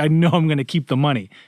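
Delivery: mock sweet, weepy, shrill, loud, tearful crying voice. Retelling a scene in which the character starts to cry: imitating someone crying. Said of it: "she's crying".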